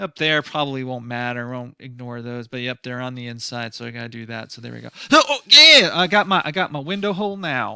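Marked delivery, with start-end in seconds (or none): 5.1-7.8 high, loud, sarcastic cheer. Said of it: "I'm being a bit sarcastic".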